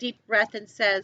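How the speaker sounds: plain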